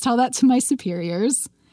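ordinary delivery

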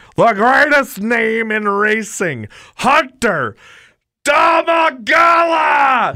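very high, slow, stretched-out announcer call. Doing an impression of a Hall of Fame announcer calling a driver: Larry McFall impression. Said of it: "I can kind of do an impression of him".

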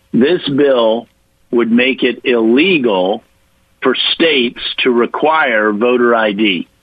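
slow, with pauses phrase by phrase. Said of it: "so I'm gonna say it slowly".

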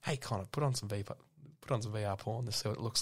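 hushed whisper. Speaker retells what he whispered in his mate's ear so the group wouldn't hear, whispered. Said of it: "I like whispered".

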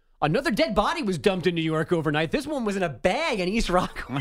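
super giddy, laughing newsreader voice.

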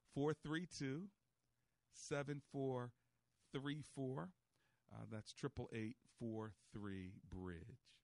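slowed-down delivery. Host repeats the phone number for callers, spoken slower. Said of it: "I'll try to say it slower".

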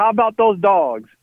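high, called-out southern drawl. Retelling what a man called out entering the hotel breakfast, in a southern drawl. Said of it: "in that southern drawl of his".

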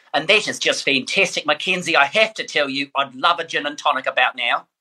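put-on happy, bright New Zealand accent. Speaker shows how his wife's New Zealand family speaks, in a New Zealand accent. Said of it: "they speak like this".

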